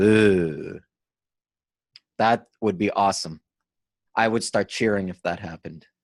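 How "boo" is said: drawn-out boo in a French accent. Describing a special boo whenever he touches the puck, boo in French accent. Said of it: "a French boo with a French accent".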